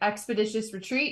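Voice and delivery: normal talking voice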